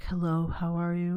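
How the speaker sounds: put-on whisper. Mimicking another speaker's greeting: imitating someone whispering. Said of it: "why is she fucking whispering like that?".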